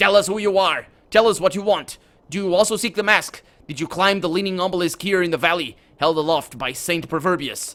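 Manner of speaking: layered, blended, angry buzzing voices. Narrator voices the three-faced creature questioning the listener: buzzing, angry blended voices. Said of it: "the three voices blend into one buzzing, angry harmony".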